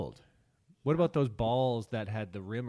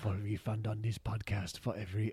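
put-on German accent, quieter; 4 dB quieter than usual. Offering a refund still in character: Werner Herzog impression. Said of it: "I'm losing the accent".

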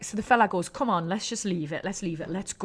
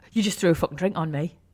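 plain

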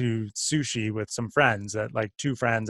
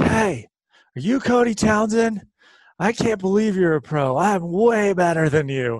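brash, loud, high yell carrying across a room; 9 semitones higher, 7 dB louder than usual. Retelling a stranger calling out across a fancy sushi restaurant, retelling a yell across tables. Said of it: "he's yelling it across like 20 tables".

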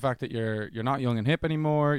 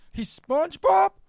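put-on very high, raised, baffled older New York man voice; 7 dB louder than usual. Describing a TikTok, the speaker quotes a dad puzzled by SpongeBob; old New York dad voice. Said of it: "he's some old New York dad".

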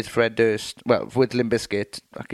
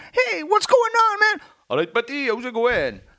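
put-on very high, sing-song Welsh accent drifting into Indian. Describing someone coming up to chat, the speaker tries an attempted Welsh accent. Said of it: "My Welsh impression ... comes out very Indian".

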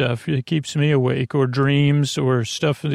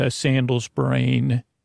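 ordinary delivery

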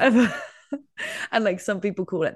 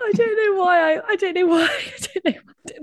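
laughing uncontrollably, much higher and louder; 14 semitones higher, 4 dB louder than usual. Reacting to going off the production notes, laughing uncontrollably. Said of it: "I can't stop laughing".

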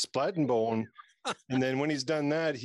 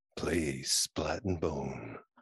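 very low, deep, sultry seductive voice; 10 semitones lower, 4 dB quieter than usual. Asked to deliver the tagline in a sexy voice. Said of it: "Say it in your sexy voice".

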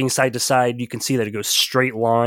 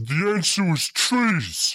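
ogre voice, raised pitch; 6 semitones higher, 3 dB quieter than usual. The game master speaks as a two-headed ogre staring at a player, ogre voice. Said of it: "you see a two-headed ogre standing".

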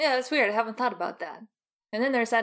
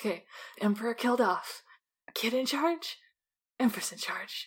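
mumbled, half to herself, muttering; 3 dB quieter than usual. Voicing a character who mutters back to herself: muttering to herself. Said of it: "muttering back to herself".

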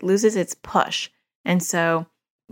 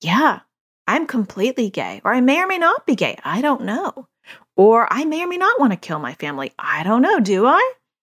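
sarcastic, sing-song, swooping delivery; 3 semitones higher than usual. Showing how someone might answer back to a remark, sarcastic comeback. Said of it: "but to be sarcastic back".

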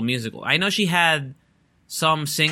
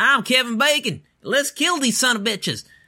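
very high-pitched put-on southern cowboy-town accent; 9 semitones higher than usual. Describing the movie Tremors, act out how its characters talk, in a southern accent. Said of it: "they talk with the southern accent".

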